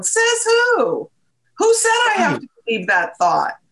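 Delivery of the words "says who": cheeky, sassy delivery, pitched very high. Showing listeners how to say it when challenging a thought: sassy tone. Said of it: "say that with a little bit of a sassy tone".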